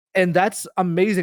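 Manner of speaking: ordinary delivery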